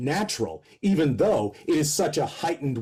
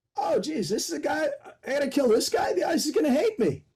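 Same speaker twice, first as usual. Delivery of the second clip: movie-star voice, pitched very high; 12 semitones higher than usual. Retelling meeting an actor at rehearsal: John Travolta impression. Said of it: "That's a pretty good Travolta".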